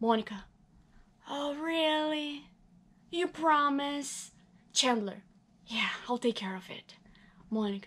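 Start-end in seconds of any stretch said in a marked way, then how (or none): 1.3-4.3 put-on drunken voice, higher, slower. Reading Monica answering Chandler's plan to hide her drunkenness, very drunk. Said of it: "He goes out into the hall and finds a very drunk [name] lying up against [name] and [name]'s door".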